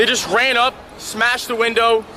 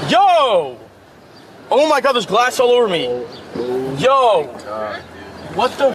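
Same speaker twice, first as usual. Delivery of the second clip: fake shocked yelling. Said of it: "that's a very good performance".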